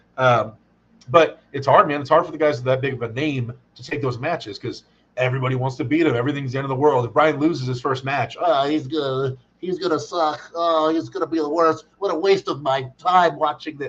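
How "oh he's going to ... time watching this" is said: slow, dragged-out, complaining put-on nerd voice. Imitating viewers reacting to a big-name fighter losing: nerd voice. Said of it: "the nerd voice just comes out".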